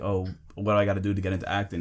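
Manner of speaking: plain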